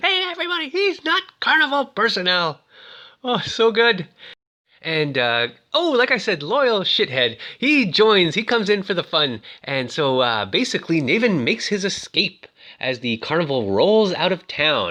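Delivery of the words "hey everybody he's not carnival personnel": play-acted, shrill, hollering scream. Recounting a story, speaker acts out the madman's words: retelling a scream. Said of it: "He's screaming".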